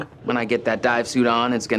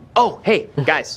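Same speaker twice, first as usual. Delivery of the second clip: loud, called-out voice; 5 semitones higher, 5 dB louder than usual. A character greets the group with a loud greeting. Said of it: "why are you so loud?".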